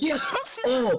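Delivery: high, loud, gasping excited yes.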